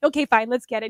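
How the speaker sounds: ordinary delivery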